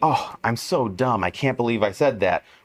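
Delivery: sarcastic, self-deprecating tone.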